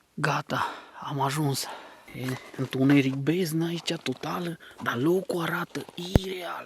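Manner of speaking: speaking in a whisper. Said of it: "Vorbesc în șoaptă".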